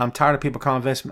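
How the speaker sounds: normal talking voice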